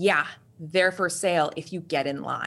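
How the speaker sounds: blunt, cutting, harsh and curt tone. Retelling the woman behind the counter's reply: imitating a harsh reply. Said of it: "Really harsh".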